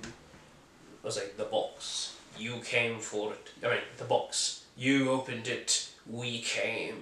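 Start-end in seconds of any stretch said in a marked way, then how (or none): 1.4-7.0 low, slow, gravelly whispered gargle with gravitas. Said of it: "great gravitas in his voice".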